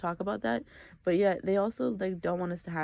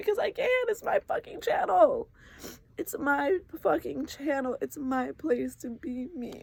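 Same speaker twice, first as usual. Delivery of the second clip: high, tearful crying outburst; 8 semitones higher than usual. Speaking about being judged for crying on their own channel, crying. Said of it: "why is this bitch crying right now?".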